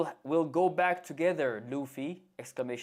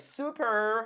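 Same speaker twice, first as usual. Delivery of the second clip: put-on American pronunciation of super, higher pitch; 8 semitones higher than usual. Imitating how the voice actor said it lately: imitating an American Super. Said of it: "you sound American".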